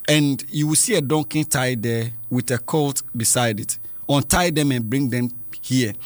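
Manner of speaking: normal talking voice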